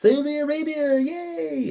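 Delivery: very high, cheering yay. Retelling a press conference announcement: imitating Triple H cheering. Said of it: "Like that".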